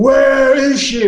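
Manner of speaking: booming, thundering cry, very loud and high. A storyteller voices Zachariah, lifting a guard off the ground without touching him: booming voice. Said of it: "his voice booms".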